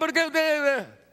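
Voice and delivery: put-on very high, loud, complaining child's whine. Recounting the child sent to his room, the speaker imitates him complaining. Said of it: "Iba quejándose".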